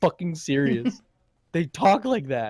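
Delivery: earnest, passionate, emphatic, insistent delivery. Retelling how he insisted he was serious, mock-passionate insistence. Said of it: "I've never seen him so passionate about it".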